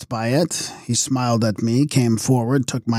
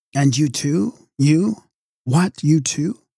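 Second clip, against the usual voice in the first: voice quivering, trembling throughout; 3 semitones higher than usual. Reading a narrator who hears the queen is doomed: trembling voice. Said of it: "in a trembling voice I said".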